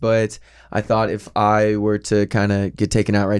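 ordinary talk, nothing marked

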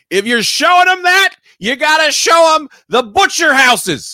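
play-acted shrill, high, loud screamed outburst. Recounting reacting to a scene with a hot pastor, retelling own screaming. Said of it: "I'm screaming this".

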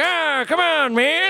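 put-on very high, very slow, drawn-out aged voice. Trying out a Biden impression: Biden impression. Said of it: "get our old voice calculated just right".

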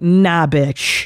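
put-on strong New Yorker voice. A mom retelling how they ignored her when she said hi, imitating a total New Yorker. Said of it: "they pull like the total New Yorker".

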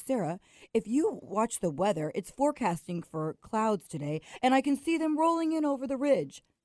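heavy, dropped-down voice pitched way low. Imitating Randy answering a remark about the nice day: imitating Randy. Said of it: "I think that was a good impression".

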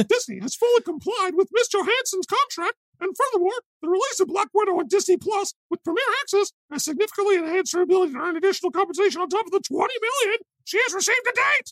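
very high, cartoon-style voice. Reading a Disney statement aloud: Mickey Mouse voice. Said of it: "read it in my head in Mickey Mouse's voice".

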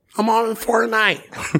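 put-on country accent squeaked up very high. Retelling what Foki answered when asked what he was doing, imitating Foki's country accent. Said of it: "his country accent".

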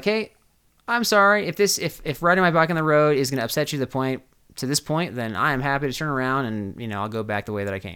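normal talking voice

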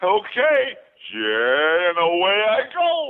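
big cartoon bear voice, high and swooping. A voice actor performs the Yogi Bear voice they once did. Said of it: "I did the voice of Yogi Bear".

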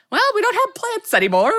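chirpy, bright, cheerful, high-pitched voice. Imitating a TikTok creator living in the dark: imitating Silka's cheerful voice. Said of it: "she's so, like, cheerful".

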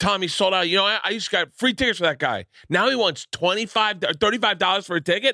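clumsy put-on Philadelphia accent, pitched high. Retelling what a fan in philadelphia said: bad philadelphia accent impression. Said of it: "I'm doing accents bad".

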